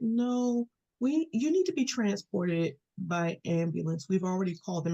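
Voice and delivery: acted very low, calm voice. Retelling what a man at urgent care told them, imitating a very low, calm voice. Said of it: "talking in this very low, calm voice".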